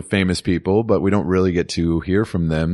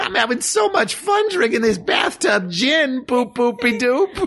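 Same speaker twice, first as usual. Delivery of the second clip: strained, very high-pitched voice. Playing a partygoer in an acted party scene, high-pitched straining voice. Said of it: "It's so high-pitched and straining".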